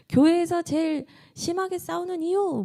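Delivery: high-pitched AI narrator voice.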